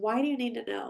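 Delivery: gentle, serene, calm and peaceful tone. Retelling what a doctor said in reply: imitating calm, peaceful speech. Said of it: "he said it so calmly and just so peacefully".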